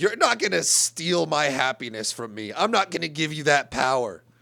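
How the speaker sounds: put-on, very serious, earnest outburst. Retelling the driver's reply after being insulted: imitating someone getting real serious. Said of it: "He gets real, like".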